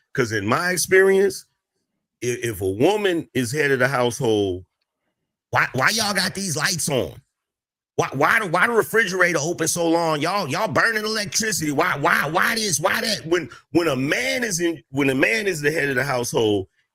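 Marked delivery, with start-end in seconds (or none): 5.5-13.2 stammering, fussy nagging scold with repetitions. Imitating a woman as head of the household, imitating someone yelling about the lights. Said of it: "yelling at everybody about the lights being on".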